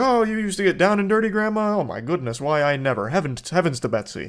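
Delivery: corny, awkward, goofy, cringy hammed-up gushing. Retelling the interviewer's next line to grandma: imitating goofy, cringy delivery. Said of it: "And then she's like".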